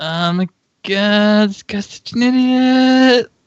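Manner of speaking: all-in cartoon voice, very slow, every word stretched. Imagining paperwork filers reacting to a lawsuit: Cartman voice. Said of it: "full Cartman".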